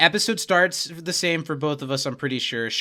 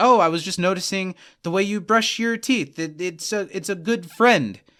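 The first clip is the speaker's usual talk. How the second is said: put-on stammering voice at a higher pitch; 4 semitones higher than usual. Retelling a scene where Chidi walks in awkwardly: imitating Chidi stammering.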